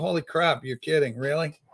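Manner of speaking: ordinary talk, nothing marked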